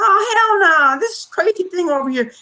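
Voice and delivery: very high woman's voice. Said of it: "I'm reenacting some, someone".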